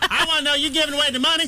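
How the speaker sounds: very high, squeaky radio caller voice. A show host, while a co-host giggles, doing an impression of a caller. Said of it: "I just like your impression of a caller".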